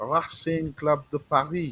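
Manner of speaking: put-on French accent, attempted French pronunciation. Recounting a club's history, naming the french opponent in a put-on french accent. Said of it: "in my best French accent".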